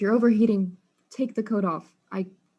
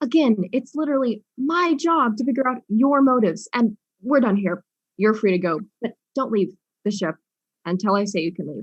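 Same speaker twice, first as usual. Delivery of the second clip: put-on hard-nosed tough guy voice, raised; 3 semitones higher, 6 dB louder than usual. Ending questioning of a suspect about motives and dismissing them: tough guy act. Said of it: "this tough guy impression".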